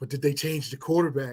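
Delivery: quick, fast, rasping voice. Retelling a talk about the Cowboys, quoting him in his raspy voice. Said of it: "with his this raspy voice".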